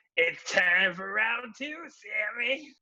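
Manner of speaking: high, slow, weird screaming villain voice. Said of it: "like, weird voice like that".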